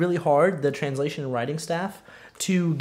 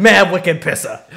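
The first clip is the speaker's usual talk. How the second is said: put-on mock Boston accent; 9 dB louder than usual. Imagining anime game characters all talking in Boston, put-on Boston accent. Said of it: "all of them in Boston?".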